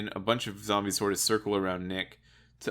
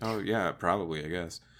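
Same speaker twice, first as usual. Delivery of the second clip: distracted, dazed, absent-minded, half-present tone; 3 semitones lower, 4 dB quieter than usual. Retelling a game scene where Nick barely pays attention: imitating Nick distracted and dazed. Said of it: "Nick is beside himself".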